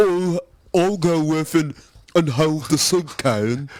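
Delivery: slow, goofy, silly made-up voice. Guessing how the soup-can protester would sound: guessed silly voice for the protester. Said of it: "I'm guessing it would be like this".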